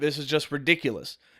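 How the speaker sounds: ordinary talk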